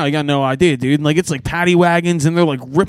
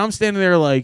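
normal talking voice

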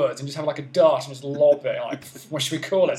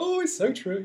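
put-on giggly, very high laughing voice; 9 semitones higher, 4 dB quieter than usual. Mocking how she laughs at your jokes, imitating Samantha laughing along. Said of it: "like Samantha when she's laughing at your jokes".

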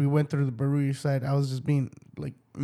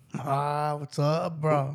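put-on casual, relaxed East LA accent. Imitating a kind man they know greeting someone, in an East LA accent. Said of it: "the East LA accent".

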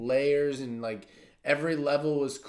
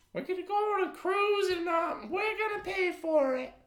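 very high-pitched put-on grandparent voice. Acting out your grandparents' phone call to your parents, imitating a grandparent. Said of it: "my grandparents' voice".

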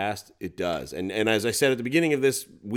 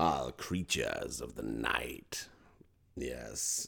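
very deep, hushed, slow, creaky spooky voice; 9 semitones lower, 11 dB quieter than usual. Podcast co-host introducing the next one, in a spooky voice. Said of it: "I'll let you do your spooky voice".

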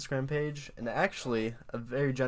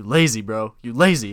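put-on loud whisper; 9 dB louder than usual. Retelling someone whispering to himself while dumbbell pressing: imitating a loud whisper. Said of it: "whispering super loud".

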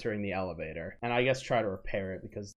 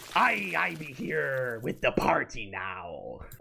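put-on pirate captain character voice; 4 semitones higher than usual. The storyteller voices the captain stepping off a pirate ship, pirate captain voice. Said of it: "the captain walks down".

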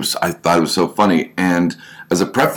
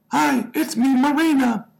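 male speaker's very high put-on girly voice. Retelling a chat, a guy voices the girl the way guys do; imitating Marina. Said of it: "I will do her voice like a guy would do a regular girl".

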